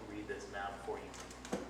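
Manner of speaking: plain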